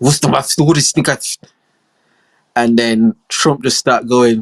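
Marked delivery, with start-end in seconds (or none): 0.0-1.4 put-on higher-pitched Russian accent. Retelling a phone call answered at the Kremlin: Russian-accented voice. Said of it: "a Russian voice answer, speaking in Russian".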